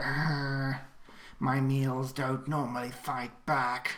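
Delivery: slow, hungry monster voice with long arr. Narrating a fight, voicing the Bosca stabbing into a player: voicing the monster. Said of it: "you just hear".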